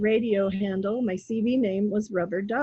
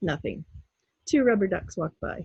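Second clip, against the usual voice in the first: ordinary talk, nothing marked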